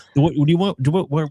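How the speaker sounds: stumbling over words. Host speaking to a co-host on a show, stuttering. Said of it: "I'm so stuttering".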